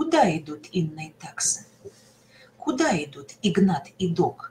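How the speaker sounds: Куда stressed, second intonation construction, wide pitch range.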